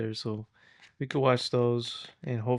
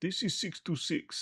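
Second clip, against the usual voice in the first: put-on half-whispered, breathy, hushed Bulgarian accent; 7 semitones higher, 5 dB quieter than usual. Comparing a new voicing with the character's cool accent, do Jumba's Bulgarian accent. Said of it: "his cool Bulgarian accent".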